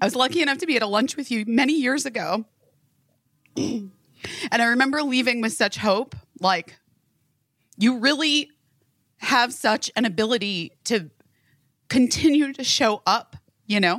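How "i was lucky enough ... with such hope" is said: tearful, choked-up voice, faster. Speaker addresses Shannon, choking up near tears. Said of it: "I'm going to cry".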